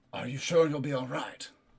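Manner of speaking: voiced, in-character stage whisper. Voicing a character who checks on a player while half-whispering. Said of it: "he would, like, whisper to you".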